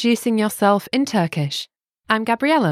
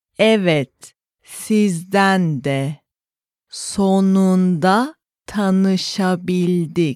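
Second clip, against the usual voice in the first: spoken slowly, at a slow pace; 3 semitones lower than usual. Playing a Turkish lesson dialogue for learners, spoken slowly. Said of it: "Let's hear the conversation one time slowly".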